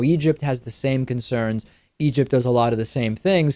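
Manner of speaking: normal talking voice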